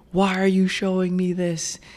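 put-on bellowing cry, pitched very high. Recounting a scene where a man shields a little girl, the speaker retells his bellowed line. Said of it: "he bellowed into the night".

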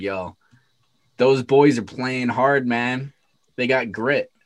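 ordinary talk

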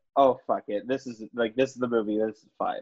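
ordinary delivery

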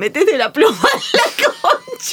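very high, climbing, yelled jeering tone. Speaker recalling a carnival night out with university friends, retelling a shout. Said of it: "una le gritaron".

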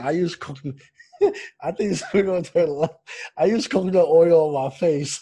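words breaking up with laughter throughout. Admitting to using coconut oil too, laughing while talking. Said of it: "I'm laughing 'cause you talk about coconut oil".

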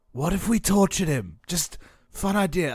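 hushed whisper. Playing a game, the speaker turns to the other players, whispering. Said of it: "I'm like whispering this to the others".

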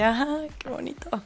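mock high squealing, gushing, deeply moved exclamation. Retelling squealing the whole way after being thanked, re-enacting a squeal. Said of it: "todo el camino fui chillando así de".

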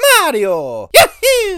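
very high, loud cheer, swooping wildly in pitch. Announcing himself as a game character: Mario voice. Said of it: "It's me".

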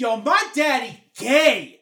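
put-on drunk shouting. Retelling what a drunk daughter kept shouting: imitating a drunk daughter shouting. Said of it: "like that".

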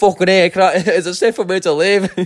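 poor put-on Irish accent. Retelling what you said while trying to clean up safely, in a bad irish accent. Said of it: "my Irish accent is not very good".

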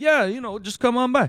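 put-on very high, cliché Italian accent. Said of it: "Italian kind of cliche".

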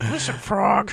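very high-pitched, angry puppet voice. Discussing a puppet character leveling with someone, doing her mock-angry Frank Oz puppet voice. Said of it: "you could hear Frank Oz coming out of that voice".

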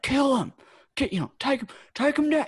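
very high, loud screaming. Retelling how a man screamed during his kids' wrestling: retelling a man's scream. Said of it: "he's just screaming like".

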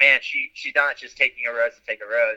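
ordinary talk

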